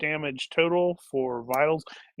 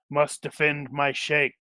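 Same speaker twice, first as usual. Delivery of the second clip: eerie, creepy, flat, level monotone drone. Narrating a fight, the speaker voices an attacker in a creepy monotone voice. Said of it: "saying in a creepy monotone voice".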